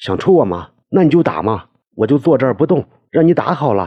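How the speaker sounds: high, loud, openly defiant yelling. Answering a threat to hit him, shouting back. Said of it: "他也叫道".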